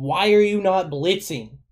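loud, drawn-out hollering yell. Retelling watching a game with dad: imitating yelling at the tv. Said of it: "me and my dad are just yelling".

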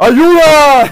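put-on macho, tough yell. Retelling a break-in at home: retelling a macho shout. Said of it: "saco mi voz así de, de macho total".

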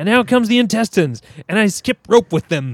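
overjoyed, fast, high, rattled-off delivery. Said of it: "he always says things in, like, super happy voices and, like, super fast".

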